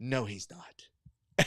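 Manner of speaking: quiet mutter under breath. Retelling an audience member's reply: imitating someone muttering under breath. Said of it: "just under her breath goes".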